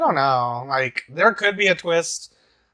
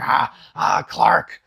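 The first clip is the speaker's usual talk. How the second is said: savage, scratchy rasping voice. Speaker imitating how Octavia sounds on the show, scratchy Octavia voice. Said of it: "That kind of scratchy voice".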